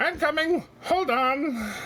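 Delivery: tiny, very high-pitched gnome calling voice. Narrating a scene, a gnome calls out from somewhere higher up; little gnome voice. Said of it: "you hear a little voice".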